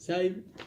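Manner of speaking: weird, odd, high-pitched voice.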